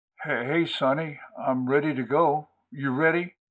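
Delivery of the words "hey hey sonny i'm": ordinary delivery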